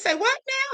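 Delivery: put-on startled disbelief, very high-pitched. Retelling hearing the news: imitating own shocked reaction. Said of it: "I was shocked and appalled to hear that".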